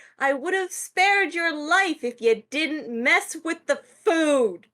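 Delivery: small, high elf voice, crying out. A voice calls out to the person who messed with the food: little elvish voice yelling. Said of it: "a little elvish voice just yell out like".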